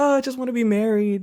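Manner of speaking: high, mock lovesick princess voice, pining.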